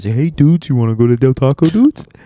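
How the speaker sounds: easygoing laid-back surfer-dude voice, cartoon-bear tinge. Showing what a guy sounds like, speak like Keanu Reeves mixed with Yogi Bear. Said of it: "That Keanu Reeves mixed with Yogi the Bear".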